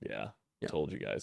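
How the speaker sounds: put-on smirking executive voice. Acting out a winking CEO bragging to the public: put-on smug winking CEO. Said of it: "one of these C E O winks like".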